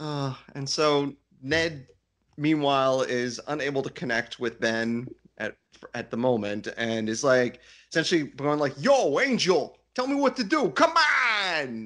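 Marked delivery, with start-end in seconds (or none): 8.8-11.9 put-on slow, laid-on New York accent, pitched up. Recapping a scene, the speaker voices Ned calling to Angel in a New York accent. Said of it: "I pictured him doing that in New York accent".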